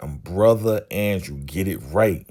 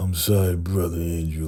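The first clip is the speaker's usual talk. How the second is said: put-on reluctant, grudging tone. Retelling how a player was forced to repeat an apology: imitating a reluctant apology. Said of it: "he really don't wanna do it".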